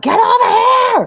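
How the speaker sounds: mock, very high, loud hollered yell. Retelling yelling at a son about the computer: imitating own yelling. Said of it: "I'm yelling at my son".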